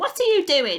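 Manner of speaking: put-on piercing, shrill, loud old grandma voice. Narrator reading a grandmother calling from the next room, shrill voice. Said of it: "came the shrill voice from the next room".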